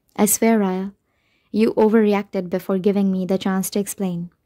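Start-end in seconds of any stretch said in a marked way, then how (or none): none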